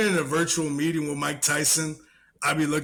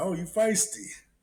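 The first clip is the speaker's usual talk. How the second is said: amused, teasing put-on celebrity voice; 4 semitones higher than usual. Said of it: "He be like".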